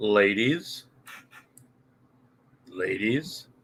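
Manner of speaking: slow creepy drawn-out voice. Speaker tries the line again after being told to say it slower: slow, creepy drawn-out voice. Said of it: "you gotta say it slower, like you're adding an extra syllable... really creepy".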